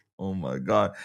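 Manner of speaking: words breaking into laughter, very low and soft. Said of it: "I don't know why I'm laughing".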